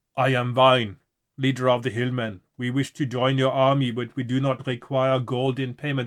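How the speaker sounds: loud, put-on Austrian accent. Reading a gamebook character's lines aloud: put-on austrian accent. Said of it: "I don't know why he's Austrian".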